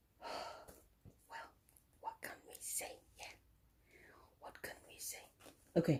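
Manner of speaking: hushed, barely voiced whisper. Doing a tarot card reading, whispering. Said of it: "I don't know why I'm whispering".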